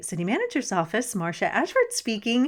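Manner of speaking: sugary, super sweet, sing-song voice. Retelling a mother answering the office phone: imitating a super sweet phone voice. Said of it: "answer it with this super sweet voice".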